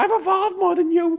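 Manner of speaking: very high, squeaky, tiny monkey voice. Retelling a funny movie scene, imitating a tiny movie monkey. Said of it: "he's just this wee tiny monkey who's like".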